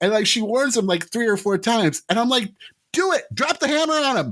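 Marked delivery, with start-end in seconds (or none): 2.9-4.3 mock, high, heated, egging-on shout. Recalling a heated trial scene with Worf, retelling a yell. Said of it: "I even yelled at at one point".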